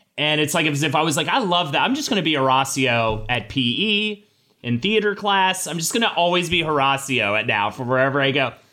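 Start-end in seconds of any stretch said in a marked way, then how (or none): none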